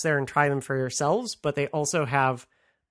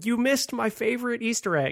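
mock screaming, higher; 8 semitones higher than usual. Imagining a listener who is upset about a missed Easter egg: imitating someone screaming. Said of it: "There's someone out there now screaming".

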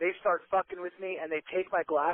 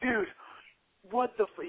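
put-on angry, pissed-off outburst, higher; 4 semitones higher than usual. Retelling how a friend rushed in flustered: imitating someone pissed off. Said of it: "he was, like, all pissed off".

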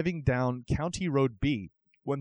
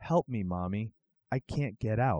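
put-on ghostly crying girl voice, quieter, slower; 4 semitones lower, 3 dB quieter than usual. Telling an urban legend about a voice over the radio, imitating a ghostly crying little girl. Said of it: "the ghostly voice of a little girl come over your speakers crying".

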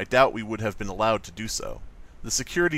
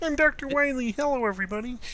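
put-on very high-pitched frog puppet voice. One of the group speaks up in a Kermit the Frog impression. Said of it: "That's a really good Kermit the Frog impression".

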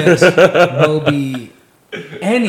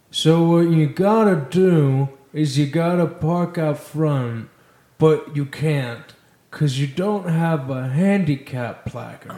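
painfully slow, drawn-out speech; 4 dB quieter than usual. Asked for an impression, imitating a security guard who talked real slow. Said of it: "Do an impression, [name]".

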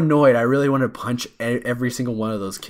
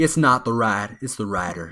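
slow Alabama-style Southern US drawl; 2 semitones lower than usual. Quoting a movie line after being asked how to do southern: [name] southern accent. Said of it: "So how do we do southern?".

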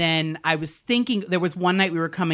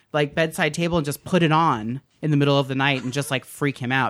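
ordinary delivery

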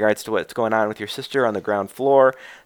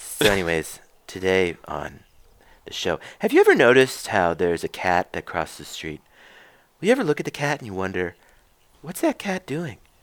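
musing public-radio host voice with swooping pitch; 3 semitones lower than usual. Asked to do a favorite impression, introduce today's show in an Ira Glass impersonation. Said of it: "That's my Ira Glass impersonation".

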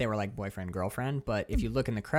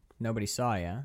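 ordinary delivery

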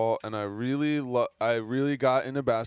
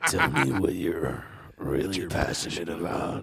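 low, put-on sexy, seductive come-on voice; 6 semitones lower than usual. Asked to say it again after someone called the voice the sexiest, put-on sexy voice. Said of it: "Say that again".

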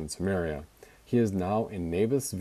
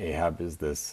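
plain

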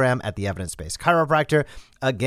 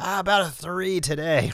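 put-on gritted-teeth patient voice, higher pitch; 5 semitones higher, 3 dB quieter than usual. Imitating a patient rating their pain to a clinician, as a mock gritted-teeth patient. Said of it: "as they say that through gritted teeth".

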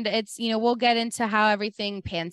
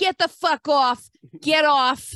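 laid-on, comic, exaggerated New Jersey accent; 4 semitones higher, 4 dB louder than usual. Retelling Snooki cursing at the people walking her home, in her Jersey accent. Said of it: "in her like hilarious Jersey accent".

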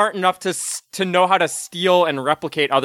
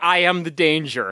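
normal talking voice

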